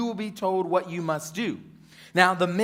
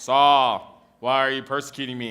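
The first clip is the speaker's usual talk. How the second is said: deep, cool-dude voice; 5 semitones lower, 4 dB louder than usual. Retelling the voice speaking to Saul: imitating Jesus with a deep voice. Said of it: "he sounds like a really cool dude with a deep voice".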